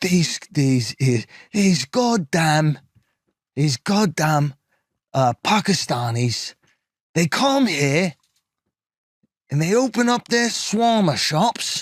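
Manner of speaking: play-acted, slow, rambling drunk man's tirade. Retelling what a drunk man on a Scottish street said: imitating a drunk man. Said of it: "he's all drunk".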